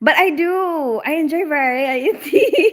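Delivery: very slow, drawn-out speech through laughter. Speaker answers a question about liking different roles: laughing while talking. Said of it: "I don't know why I'm laughing".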